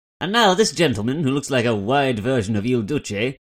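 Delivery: loud, put-on old newsreel announcer voice. Imagining a newsreel narrator describing a politician: British Pathé newsreel voice. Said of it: "in like British Pathé voice going".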